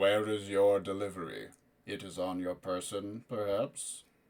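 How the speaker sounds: deep, soft, rumbling voice. Narrating a voice from the room's walls addressing someone entering, deep rumbling voice. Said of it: "the deep rumbling voice that seems to emanate from the walls".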